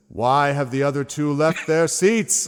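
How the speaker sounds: thundering lordly voice, very loud, high and booming. Playing the lord as he turns and speaks, in a booming voice. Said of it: "And his voice booms".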